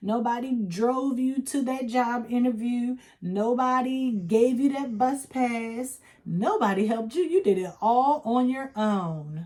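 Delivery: pointed, heavy, dripping sarcasm throughout. Talking about people who say they did it all alone: sarcastic tone. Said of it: "I hope you can hear the sarcasm".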